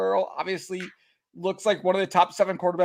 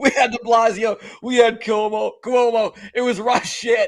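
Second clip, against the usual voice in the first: loud, slow, drawn-out thrilled excited-fan voice; 3 semitones higher, 6 dB louder than usual. Retelling a Knicks fan's TV interview: imitating an excited Knicks fan. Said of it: "He's all excited about the Knicks game".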